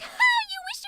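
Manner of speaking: very high, very loud, shrill, rapid, manic, unhinged outburst. Voice actor demonstrating an audition for a crazy character who runs in, crazy character voice. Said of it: "voicing the crazy bitch who runs in here".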